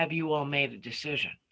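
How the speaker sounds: ordinary talk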